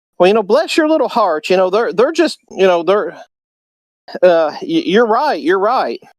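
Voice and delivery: honeyed, syrupy sweet Southern tone. Showing how people in the south say it: sweet southern bless-your-heart tone. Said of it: "the way you do that's with the tone of voice".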